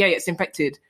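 ordinary talk, nothing marked

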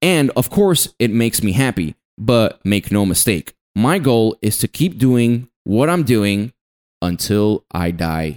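ordinary talk

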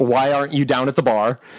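ordinary talk

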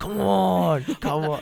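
booming, very loud, dragged-out, gravelly cheering voice. Retelling how a relative cheers while recording a match: imitating Skylar's deep voice. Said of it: "the deep voice".

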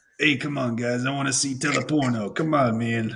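put-on alien voice. Joking with the group after an Italian-accent remark, doing a Watto voice. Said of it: "That just sounds like Watto from Phantom Menace".

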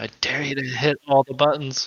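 quiet, hushed whisper. Leaning over to another character to dare them: whispering.

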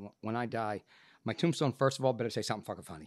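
ordinary talk

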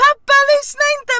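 put-on high, loud screaming girl voice.

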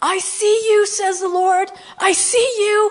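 high, loud yell. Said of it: "I just yelled out".

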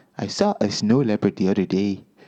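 put-on, loose Canadian accent. Playing someone who lives on a mountain: put-on Canadian accent. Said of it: "Are you doing Canadian accent?".

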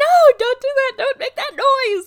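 shrill, very high, very loud scream. Speaker recalls reacting inside a Stranger Things-themed house, retelling her own screaming. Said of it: "and I'm all screaming".

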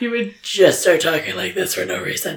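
low, gravelly, intense voice. Recalling how Chad Michael Murray Batmaned, imitate his low gravelly voice. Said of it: "his voice just got real low and intense and gravelly".

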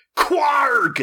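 high, hurt, pained yell pitched way up. Quoting a game dub line after another impression: imitating Trunks' pained yell. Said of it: "Eric Vale as Trunks going".

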